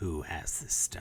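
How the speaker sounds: woman's voice. A stone speaks to the orc who picked it up: female stone voice. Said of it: "you hear a female voice emanate".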